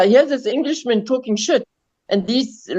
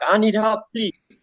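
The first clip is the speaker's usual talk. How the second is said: halting, broken English and French speech; 3 dB quieter than usual. Retelling asking a cashier for help: broken english and french. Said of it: "in my broken English and broken French".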